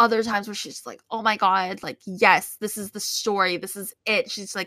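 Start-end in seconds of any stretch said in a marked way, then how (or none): none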